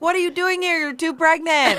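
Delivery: high screaming shouts from excited fans. Retelling what fans shouted at the pair: imitating fans screaming. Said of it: "people were screaming at us".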